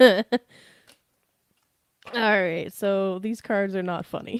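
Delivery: talking through laughter. Reading tarot cards, trying to stop laughing: laughing while talking. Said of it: "I'm gonna try to stop laughing now".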